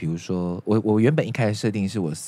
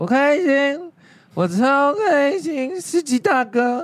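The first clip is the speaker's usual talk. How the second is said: play-acted loud, very high, tipsy drunken talk; 5 dB louder than usual. Recounting the listener being drunk in a car in Thailand: imitating someone drunk. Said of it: "有一次你要喝醉".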